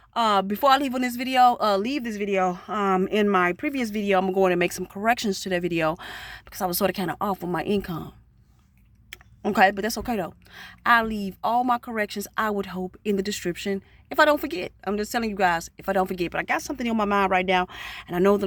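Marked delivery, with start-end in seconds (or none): 14.8-17.6 fast, rushed talking. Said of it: "I'm rushing and I'm talking fast".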